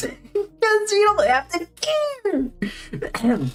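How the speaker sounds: cracking voice, very high, very slow, drawn out. Talking about ai characters, the speaker's voice cracks mid-sentence: weird voice crack. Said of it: "That was a weird voice crack".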